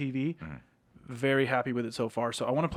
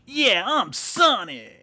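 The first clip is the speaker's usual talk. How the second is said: high, loud, punchy cartoonish game-character voice; 8 semitones higher, 8 dB louder than usual. Answering a request to do a Sonic impersonation: Sonic impression. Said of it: "can you do a Sonic impersonation?".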